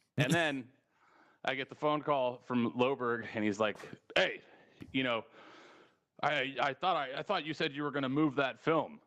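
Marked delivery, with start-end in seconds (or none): 4.2-8.9 mock irritated, put-out, annoyed and accusing tone. Retelling a phone call about a moved film: imitating an annoyed Loberg. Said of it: "He was all pissed at me".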